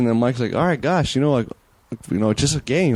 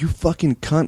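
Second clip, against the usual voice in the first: put-on, furious, angry voice; 3 semitones higher than usual. Retelling a guest punching someone in the face: retelling own angry insult. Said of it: "I'm pissed".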